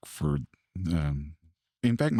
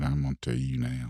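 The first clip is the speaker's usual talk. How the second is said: put-on guttural, possessed-sounding voice, lower; 7 semitones lower than usual. Retelling what the wife said at dinner: imitating her guttural possessed voice. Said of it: "She kinda got that voice, that inner guttural voice".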